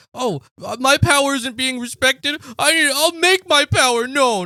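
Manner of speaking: acted whiny, high-pitched little complaining grumble. Mocking the other speaker's complaint about power: imitating a whiny voice. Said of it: "You sound like a whiny little bitch".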